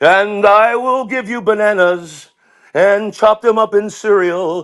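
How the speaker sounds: drawn-out, high Vegas crooner.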